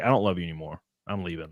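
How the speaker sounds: choked-up, tearful voice, catching, close to tears. Retelling what she said the day she left: imitating someone choking up. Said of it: "starts, like, choking up".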